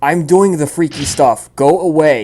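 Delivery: increasingly frustrated. Voicing a character behind a door telling visitors to go away, increasingly frustrated. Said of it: "in an increasingly frustrated voice".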